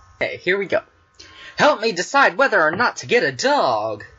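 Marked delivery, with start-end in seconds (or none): 1.6-4.0 commercial announcer delivery, like a TV spot. Starting the next advice question, sounding like a commercial. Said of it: "That sounded like a commercial".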